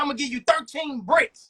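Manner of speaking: ordinary delivery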